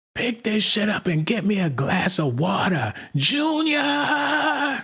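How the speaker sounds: put-on very high, shrill, drawn-out screaming yell. Retelling how a mother yells at her grown son: imitating a screaming mom. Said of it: "mom screaming in the back".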